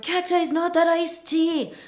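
frenzied, high, loud screaming from many voices. Retelling what a crowd shouted while crowding around someone: imitating fans screaming. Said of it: "screaming and crowding around him".

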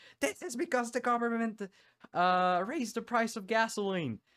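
put-on, very high-pitched crowd shouting. Retelling what people stealing TVs from stores said: imitating people shouting. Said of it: "they started shouting".

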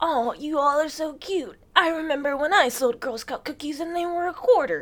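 put-on high-pitched granny-style old lady voice. Talking about selling Girl Scout cookies, imitating an old lady. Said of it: "all them old ass ladies be like".

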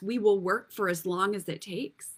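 ordinary delivery

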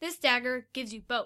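ordinary delivery

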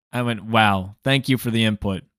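usual speaking voice

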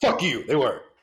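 loud, combative, aggressive delivery. Insisting to the other speaker that the jokes were funny: aggressive. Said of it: "why are you so aggressive".

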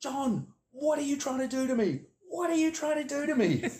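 very high, shrill, loud screaming outburst. Retelling how a boss screamed down the phone: imitating someone screaming. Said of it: "he just screamed out".

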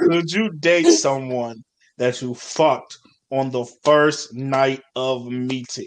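low, slow, drawn-out dramatic delivery. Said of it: "I'll repeat it for y'all".

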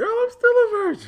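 very high, shrill, loud voice. Quoting what they told a woman who can tell when they lie: retelling a high lying voice. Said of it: "my voice get high like this".

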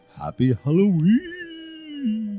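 spooky, creepy Halloween-style voice. Saying a sign-off greeting again after being asked: spooky voice. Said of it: "Do it spookier, though".

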